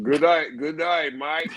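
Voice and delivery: put-on Australian accent. Asked by the group to speak in one, speaker tries an Australian accent. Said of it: "Say say good day, mate, in Australian accent".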